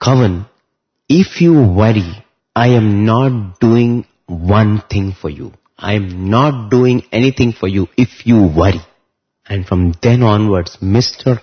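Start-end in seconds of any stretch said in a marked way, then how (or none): 0.0-8.8 put-on very stern voice. Retelling what Swami said to an anxious, worried man: retelling Swami's very stern voice. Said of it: "said in a very stern voice".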